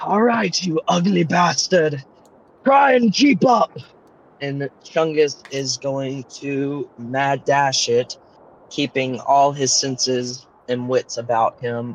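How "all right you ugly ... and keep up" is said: loud, boisterous, rowdy holler, pitched up. A player speaks as his character Chungus, in a boisterous voice. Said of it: "in a bolsterous voice".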